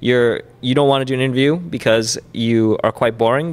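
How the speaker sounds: usual speaking voice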